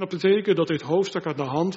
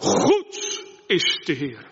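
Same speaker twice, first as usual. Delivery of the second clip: goed punched hard, forceful stress up front. Showing how the verse line should be said, with strong emphasis. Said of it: "En je moet het ook echt met zoveel klemtoon zeggen".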